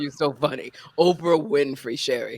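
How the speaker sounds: put-on articulate voice. Retelling a phone call from a famous caller: articulate Oprah Winfrey voice. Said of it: "the more articulate Oprah got".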